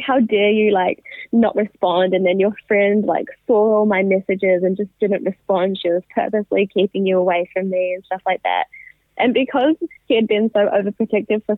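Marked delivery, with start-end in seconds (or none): none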